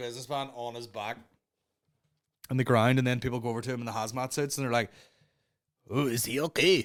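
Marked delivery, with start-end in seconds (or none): 5.9-6.8 strong, put-on Chinese accent. Retelling people in hazmat suits checking a man on the ground, put-on chinese accent. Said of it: "Such a Chinese accent".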